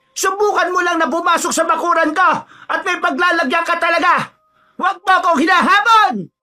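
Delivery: very high, shrill, echoing, full-voiced yell. In a story, a mother shouts at someone posing as a big bird, sudden loud shout. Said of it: "biglang sumigaw ang kanyang ina".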